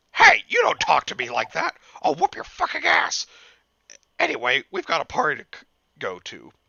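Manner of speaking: high, loud, swooping cartoon housewife voice. Reading the mother's reply to her son in the story, Marge Simpson voice. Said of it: "Marge Simpson".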